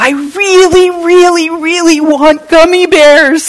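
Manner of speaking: very loud, very high, shrill, all-out full-force shout. Retelling what Preston said, agitated and near tears, imitating a forceful demand. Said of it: "he says with all the force of his body".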